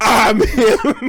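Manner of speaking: high, yelled, grand speech-giver voice. Imitating Biden doing the State of the Union: Biden yelling. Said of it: "Biden doing the State of the Union, just yelling".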